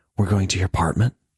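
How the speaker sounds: half whisper, partly voiced. Reading a story aloud, a woman asks if they're going to his apartment: half whisper. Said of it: "she says in a half whisper".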